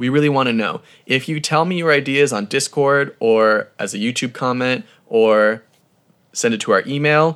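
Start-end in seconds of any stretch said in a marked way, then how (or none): none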